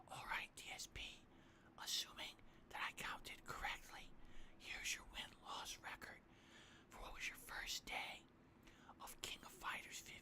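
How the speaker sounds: hushed, very quiet whisper throughout. Reading out a message from someone who tipped; whispering. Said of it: "Why am I whispering?".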